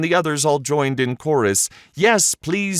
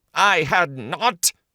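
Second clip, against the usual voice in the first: cross, snapping, sharp angry cry; 3 semitones higher than usual. The Mouse snaps back at Alice, sharp and angry. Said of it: "cried the Mouse very sharply and angrily".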